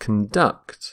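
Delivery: conduct, second syllable stressed. Explaining how the verb is pronounced, stress on the second syllable of conduct. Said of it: "stress the second syllable".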